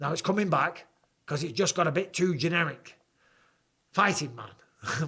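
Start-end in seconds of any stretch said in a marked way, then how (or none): 3.9-5.1 put-on British accent voice. Answering a viewer's request, trying out a John Fury impression. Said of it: "When I say fighting man, it comes back".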